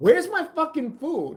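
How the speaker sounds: play-acted, very high, irate angry outburst. Retelling a diner's complaint to a waitress, imitating Mike angrily demanding. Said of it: "Mike, calm down".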